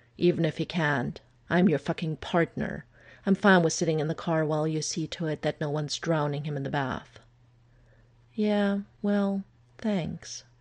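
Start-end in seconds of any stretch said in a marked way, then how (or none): 8.3-10.4 mumbled, indistinct words. A woman replies to her partner's offer to wait in the car, muttered. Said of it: "she muttered".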